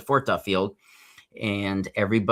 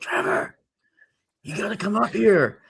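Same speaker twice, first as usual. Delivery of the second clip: whispered, high-pitched; 12 semitones higher than usual. Recounting a phone call in the dark, quoting yourself: retelling a whisper. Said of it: "and I'm whispering".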